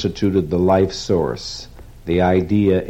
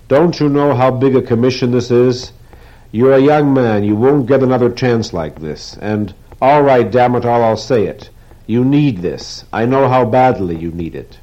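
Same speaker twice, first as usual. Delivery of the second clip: sudden, high, loud, exasperated, pleading outcry; 5 semitones higher, 6 dB louder than usual. Weidler presses Rourke after he refuses, crying out suddenly. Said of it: "Weidler cried suddenly".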